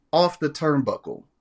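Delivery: normal talking voice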